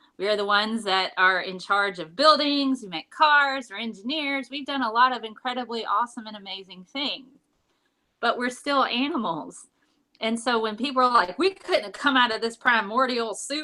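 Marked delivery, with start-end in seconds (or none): 11.4-13.7 slight put-on Southern accent. Speaker voicing people who deny humans are animals, a little bit of southern accent. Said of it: "throwing in a little bit of Southern accent".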